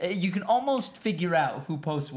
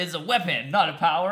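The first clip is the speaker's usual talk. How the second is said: normal talking voice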